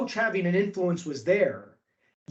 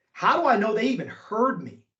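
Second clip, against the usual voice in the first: ordinary talk, nothing marked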